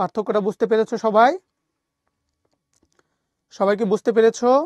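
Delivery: loud call to a group.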